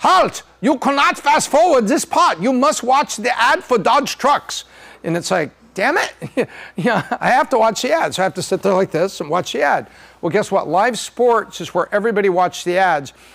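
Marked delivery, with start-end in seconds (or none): 0.0-4.6 put-on, pitched-up, commanding German accent. Speaker acts out the network stopping him from fast-forwarding: MLB Network in German accent. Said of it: "with a German accent".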